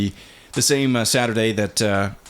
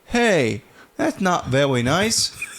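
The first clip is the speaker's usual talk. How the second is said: put-on high childlike voice. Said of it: "He totally tried to mimic me".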